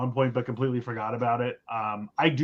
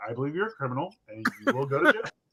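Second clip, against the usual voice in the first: acted-out, plain, factual, matter-of-fact delivery; 4 dB quieter than usual. Retelling what one person in a streamer's chat said, in a mock matter-of-fact delivery. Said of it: "it was just very matter of fact".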